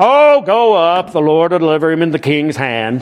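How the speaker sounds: sarcastic, mocking tone.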